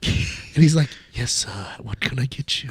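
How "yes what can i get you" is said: hushed, breathy waiter's whisper. Describing a movie-theater waiter who takes your order: imitating a waiter's whisper. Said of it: "he whispers to you".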